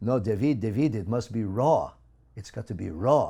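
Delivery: put-on loud French accent. Retelling a mentor's advice about raw agave nectar: imitating a French accent. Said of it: "in her wonderful French accent".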